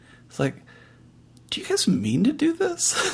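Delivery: very high, hushed mutter under the breath. Voicing Malik's remark to the group, Malik muttering under breath. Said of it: "says under his breath".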